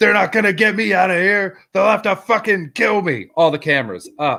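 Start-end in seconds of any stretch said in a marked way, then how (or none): 0.0-3.3 high-pitched screaming outburst. Retelling a protester who tore his shirt off: imitating someone screaming. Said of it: "starts screaming".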